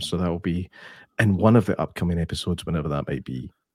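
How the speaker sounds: voice dropping suddenly very deep, low radio voice. A host wrapping up a talking point for upcoming episodes, voice suddenly deep. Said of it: "My voice went really deep there".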